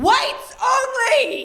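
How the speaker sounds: top-of-the-lungs shriek, shrill, very high. Retelling what the daughter screamed at an intersection: imitating a scream at the top of her lungs. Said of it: "screams at the top of her lungs".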